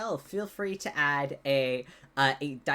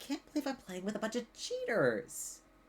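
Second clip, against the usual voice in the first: exasperated, fed-up, accusing disbelief, pitch swooping high; 8 semitones higher, 6 dB quieter than usual. Voicing Fate, who catches a player cheating at dice: voicing Fate, exasperated. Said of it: "Fate looks directly at you, Holly, and she goes".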